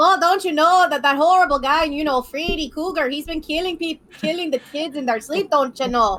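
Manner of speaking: bad, poorly done North Dakota Midwest accent. Podcaster explaining a horror villain to co-hosts, worst North Dakota-Wisconsin accent. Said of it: "That is my worst North Dakotan slash Wisconsin accent I can do".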